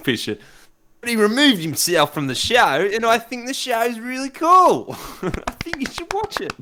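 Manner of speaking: very high, loud, swooping Australian accent. Asked by the other speaker to continue in more Australian accent, repeating the line. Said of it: "I want more Australian accent, please".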